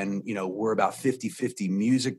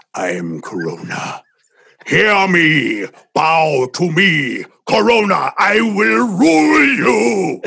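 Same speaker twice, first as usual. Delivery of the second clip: very slow, swooping, super evil villain voice; 9 semitones higher, 13 dB louder than usual. Asked what voice coronavirus would have, super evil voice of coronavirus. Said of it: "Would it be like super evil?".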